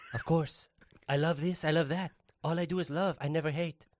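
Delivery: put-on sensual, sultry French accent. Playing a character from Paris who says all he does is love: put-on sensual French voice. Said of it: "He's very sensual, this Jacques".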